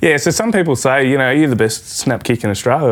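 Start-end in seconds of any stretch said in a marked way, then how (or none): none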